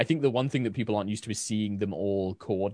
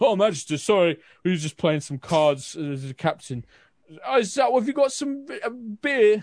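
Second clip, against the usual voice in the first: put-on drunken voices, much higher, louder; 10 semitones higher, 6 dB louder than usual. A narrator voices soldiers snapping to attention before the Magister, drunken soldiers. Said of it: "all of the soldiers kind of drunkenly snap to attention".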